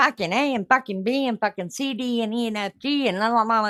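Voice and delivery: put-on Liverpool Scouse street-talk accent, swearing. Retelling how a friend talked loudly in a restaurant: imitating a scouse accent.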